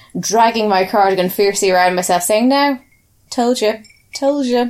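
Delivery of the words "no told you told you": acted-out smug, self-satisfied gloating, pitched up. Retelling own reaction to people's dread: imitating own smug told-you-so. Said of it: "rubbing my hands together, pursing my lips".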